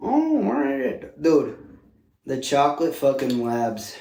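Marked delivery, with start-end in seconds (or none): 0.0-1.2 put-on slow, creaky, very high old man character voice. After praising an old man character, echoing it in an old man voice.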